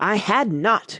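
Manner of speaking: sharp, very angry, snapping cry. Reading the story, the narrator gives the Mouse's retort to Alice, sharply and very angrily. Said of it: "cried the Mouse, sharply and very angrily".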